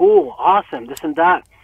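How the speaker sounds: usual speaking voice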